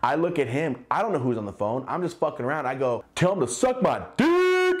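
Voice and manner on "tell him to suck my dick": put-on, very high, swooping, dragged-out announcer holler. Retelling a shout at a friend on a call: imitating his own yell. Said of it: "I yell just like that".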